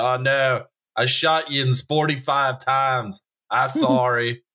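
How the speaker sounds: put-on Pittsburgh accent. Joking about old rich guys arranging hunting accidents, one apologizes: Pittsburgh accent. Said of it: "Actually, it's a Pittsburgh accent".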